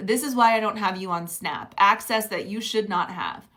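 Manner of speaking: ordinary talk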